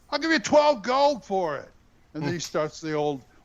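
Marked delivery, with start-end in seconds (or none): 0.1-1.7 play-acted loud, high-pitched yelling. Speaker retelling haggling over a long sword, retelling a yell. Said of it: "and I just yelled".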